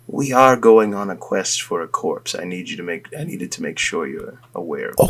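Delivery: hushed whisper, barely audible. During the game, whispering privately to another character, whispering. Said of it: "I do want to whisper to Alandi".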